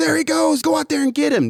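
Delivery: high yelled call.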